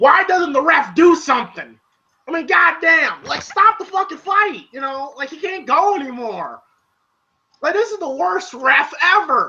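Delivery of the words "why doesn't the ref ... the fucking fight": mock yelling, pitched-up screaming outburst. Retelling watching a fight, imitating own screaming: retelling own screaming. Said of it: "I'm sitting here screaming like".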